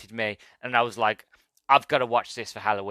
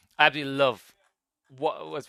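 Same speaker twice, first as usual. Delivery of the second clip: plain reading voice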